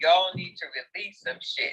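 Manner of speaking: normal talking voice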